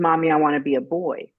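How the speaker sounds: ordinary talk, nothing marked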